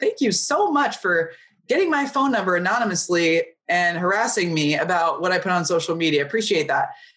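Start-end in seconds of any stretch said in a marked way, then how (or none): none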